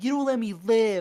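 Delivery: put-on angry yelling. Retelling what an angry sixteen-year-old boy shouted: imitating an angry outburst. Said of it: "super angry".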